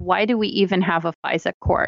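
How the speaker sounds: normal talking voice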